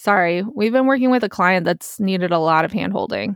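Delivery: plain reading voice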